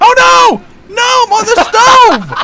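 very high, very loud, shrill shouting. Playing a game with someone and panicking, yelling. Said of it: "You are yelling again".

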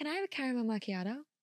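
attempted, put-on American accent. Asked by the other speaker to do your american accent quickly: american accent. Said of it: "Do your American accent real quick".

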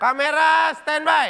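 angry, snapped yelling. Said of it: "Kok marah-marah sih".

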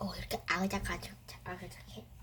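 soft ASMR-style whisper.

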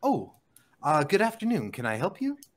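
calm, very composed, polite voice, slow pace. Game master voices a goon greeting a player, very composed voice. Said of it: "he speaks with a very composed voice where he goes".

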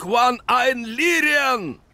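very high, loud shouting. A man commanding armored soldiers orders them to attack, shouted command. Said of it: "крикнул он".

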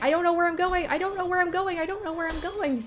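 frantic, panicked, very high babbling repetition. Speaker lost and unsure where to go, panicking. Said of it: "I'm panicking".

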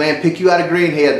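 ordinary talk, nothing marked

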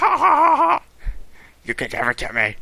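very high, weird, swooping, cawing crow-like cackle. Speaker, on fire, imagines AFK laughing at them: imitating AFK's crow-like laugh. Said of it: "That was a really weird laugh. It's like a crow".

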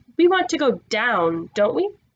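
ordinary delivery, nothing marked

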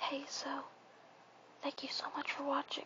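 natural whispering voice. Showing viewers their real whispering voice, in a natural whisper. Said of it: "If you want to hear my real whispering voice".

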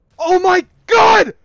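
high, loud hyped screaming.

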